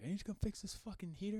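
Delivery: furious, high, angry yell with cursing. Telling how a man screamed at them about his heater, imitating a man screaming. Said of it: "he's screaming at me".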